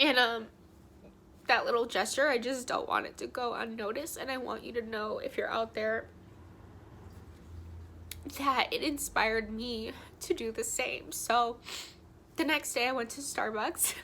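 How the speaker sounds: tearful, weeping speech, crying through the words. Addressing a stranger whose small gesture inspired her, crying while talking. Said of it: "I'm so mad that I'm crying right now".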